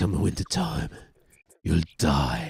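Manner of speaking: very low, hushed, gruff voice. VTuber tries out that whole gruff voice thing, in a gruff Jason Statham-like voice. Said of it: "you know that whole gruff voice thing".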